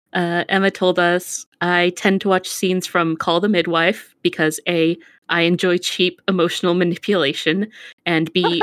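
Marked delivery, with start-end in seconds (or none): none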